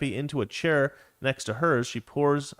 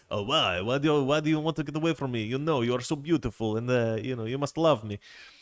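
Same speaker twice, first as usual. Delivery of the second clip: bad, clumsy, fake French accent. Retelling a cartoon scene, the speaker voices Pepe Le Pew in a bad French accent. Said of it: "that accent was terrible".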